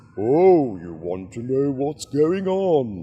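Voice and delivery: goofy, silly voice, "on" drawn out. Retelling how they moved a bin's lids like a mouth, silly talking-bin voice. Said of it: "put on a silly voice".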